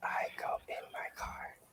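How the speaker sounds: soft asmr voice. Redoing a bit slower and quieter when asked: ASMR whisper. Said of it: "A S M R".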